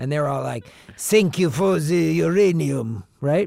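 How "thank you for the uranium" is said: slow put-on Russian accent, words drawn out. Imitating Russians giving thanks for the uranium: put-on Russian accent. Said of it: "That's my Russian accent".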